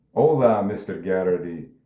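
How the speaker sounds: bad, poorly done put-on Mexican accent. Imitating a man on screen who has a bad mexican accent: bad fake mexican accent. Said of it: "I can't even do a bad Mexican accent".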